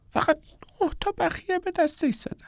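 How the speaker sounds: stifled, muffled, very high, soft voice. Narrator reads a woman's line about an injured man, in a muffled voice. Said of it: "با صدای خفه ای گفت".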